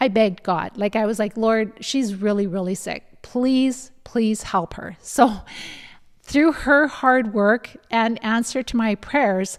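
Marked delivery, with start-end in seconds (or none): none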